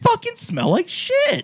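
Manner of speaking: very high, loud, sing-song, swooping psycho voice. Retelling a movie scene to friends: imitating a psycho. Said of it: "Like a little psycho".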